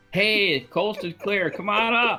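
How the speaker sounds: very high, carrying hollered yell. Calling back to the siblings that the coast is clear: yelling to siblings. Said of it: "turn around and yell at my brothers and sister".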